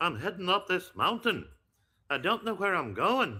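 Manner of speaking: put-on very loud, lurching, leprechaun-like Scottish accent. Retelling playing Fortnite, mixing a Scottish accent with Hank Hill. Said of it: "Scottish accent and Hank at the same time".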